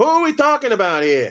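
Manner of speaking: put-on New York accent. Asking the other speaker which player they mean, he uses a New York accent imitation. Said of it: "In my best New York accent imitation".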